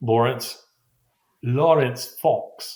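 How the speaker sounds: affected, put-on camp accent voice. Giving one's name while signing off an episode: put-on camp accent.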